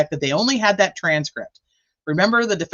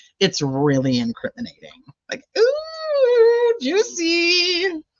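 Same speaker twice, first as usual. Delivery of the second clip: very high, silly, goofy middle-school gossip voice; 14 semitones higher than usual. Speaker imagines a middle schooler sharing hot gossip with the girlies: goofy gossiping middle-schooler voice. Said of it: "little goofy voice change".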